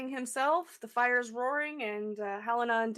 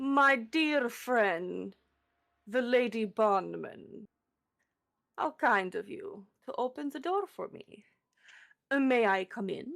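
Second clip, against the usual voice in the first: villain character voice. The narrator, as Strahd, greets the player who opened the door: Strahd voice. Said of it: "he gives you a wide, creepy smile".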